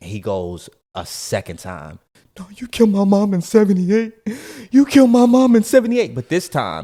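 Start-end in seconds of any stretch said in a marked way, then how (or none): 2.4-6.1 acted tearful lament, higher and louder. Retelling what a grieving man kept repeating: imitating a man crying. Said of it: "crying and lamenting over his mom".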